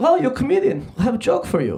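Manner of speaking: put-on Serbian-accented speech. Retelling an Uber driver offering a comedian a joke, in a Serbian accent. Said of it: "that's a Serbian accent".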